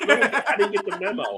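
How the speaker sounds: high, puzzled dog voice.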